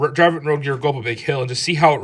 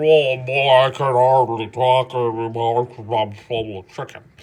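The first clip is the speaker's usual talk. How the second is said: slow, drawn-out cartoonish fat man voice. Describing a motor running too rich: cartoonish fat guy voice. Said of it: "cartoonish fat guy that's like".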